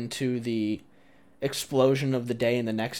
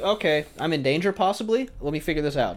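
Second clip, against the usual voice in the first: normal talking voice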